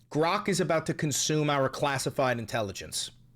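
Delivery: ordinary talk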